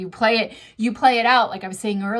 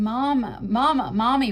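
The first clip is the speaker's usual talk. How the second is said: mock tearful, crying pleading tone; 2 semitones higher than usual. Retelling a show character calling her mom on the phone: imitating crying calls for mom. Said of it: "she was just crying and like".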